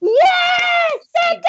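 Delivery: ecstatic, very high, loud joyful elf crowd scream. Voicing elves pouring into the streets: elves screaming with joy. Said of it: "they're screaming, going".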